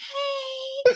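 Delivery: very high, drawn-out put-on grown-man voice. Retelling a costumed castmate at the door: put-on man voice. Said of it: "he changed his voice. So he has a man voice".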